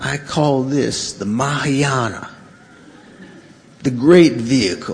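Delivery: fake Southern American accent. Retelling what a woman said, in her Southern American accent. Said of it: "in her Southern American accent".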